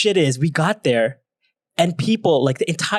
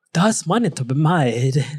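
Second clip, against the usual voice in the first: put-on Singaporean accent in English. Imagining TikTok's founder at dance nights, voicing his thought in a Singaporean accent. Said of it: "that's my Singaporean accent".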